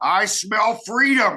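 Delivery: play-acted, high, very loud, booming, boisterous shout. Speaker shows how he yells at anyone he smells smoking marijuana: loud boisterous yell. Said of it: "yell in a very loud, boisterous voice".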